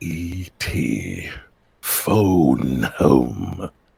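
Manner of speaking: darkest, scariest monster voice, very deep. Asked by another speaker for their darkest, scariest voice. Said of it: "Give me like your darkest, scariest voice".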